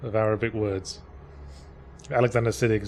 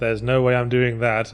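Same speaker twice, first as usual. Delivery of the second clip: ordinary talk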